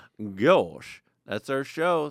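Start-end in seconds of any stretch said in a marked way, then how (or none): 0.2-1.0 cartoon dog character voice. Closing the show, the speaker signs off in a Goofy impression. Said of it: "I've practiced the Goofy impression".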